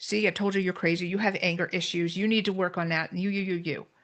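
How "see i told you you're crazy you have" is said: plain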